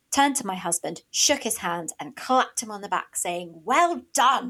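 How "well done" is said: put-on loud voice, higher and louder. Retelling an older acquaintance congratulating the husband: imitating a loud voice. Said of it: "in a loud voice".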